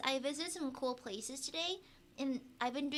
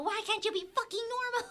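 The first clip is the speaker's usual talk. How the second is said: acted-out scream, higher and louder; 9 semitones higher, 5 dB louder than usual. Acting out screaming at someone, imitating screaming at someone. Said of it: "Me screaming at him".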